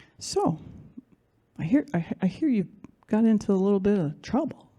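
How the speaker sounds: gentle, loving, caring, kind tone. Retelling a phone call from a father: imitating a loving, comforting voice. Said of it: "It was sounding something like this".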